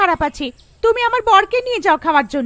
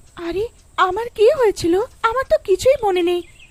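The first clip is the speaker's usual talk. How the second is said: ordinary delivery, nothing marked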